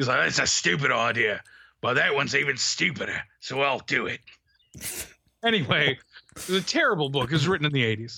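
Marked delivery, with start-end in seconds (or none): 0.2-4.2 grumpy superhero voice. Retelling reading a Care Bears book to a child: grumpy Wolverine voice. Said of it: "sound like Wolverine from the Pride of the X-Men".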